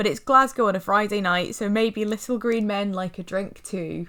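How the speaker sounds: usual speaking voice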